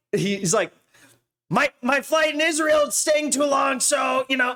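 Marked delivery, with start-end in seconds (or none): 1.4-3.8 shrill, pitched-up, high voice. Mimicking how a rabbi talks about his flight: Shmuley Boteach impression. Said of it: "this is how he talks".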